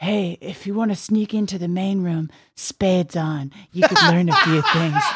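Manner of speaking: mock secretive, conspiratorial voice with awed, reverent tone. Early on at the Improv, someone came over to the speaker: imitating conspiratorial, reverent tone. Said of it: "said in this very conspiratorial, like reverent way".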